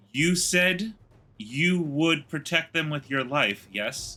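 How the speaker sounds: quiet, hushed half-whisper. A character quietly questions Tevlin before doing something drastic, half-whispering quietly. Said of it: "I whisper to him quietly".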